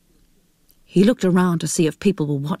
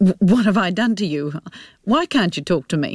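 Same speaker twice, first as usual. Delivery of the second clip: ordinary delivery, nothing marked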